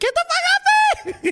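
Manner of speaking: put-on high-pitched squeal. Describing how he squirms when she does it, retelling his own high-pitched squeal. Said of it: "I get this high pitch".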